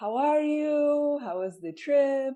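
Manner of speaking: put-on Hungarian accent, "you" drawn out. Retelling a phone call from dad, imitating dad's Hungarian accent. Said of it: "in his Hungarian accent".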